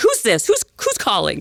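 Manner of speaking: mock, worked-up, agitated voice. Retelling a phone call, imitating the mother: imitating an agitated mother. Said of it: "so agitated".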